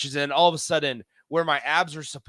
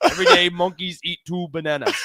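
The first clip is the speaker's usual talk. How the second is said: put-on slight Japanese accent, raised voice; 4 semitones higher, 5 dB louder than usual. Retelling a pitcher's answer about cramping: imitating a Japanese accent. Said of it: "he's got a little bit of an accent".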